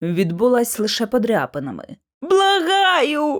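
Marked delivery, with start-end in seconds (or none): 2.2-3.4 high crying out, word stretched long. Lucy answers a voice speaking to her from the darkness; wailing. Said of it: "заволала я".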